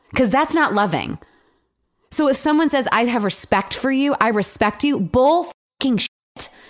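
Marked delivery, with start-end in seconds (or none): 2.1-6.4 worked-up, angry, heated, pitched-up outburst. Speaker venting in conversation, getting heated. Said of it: "I'm getting heated".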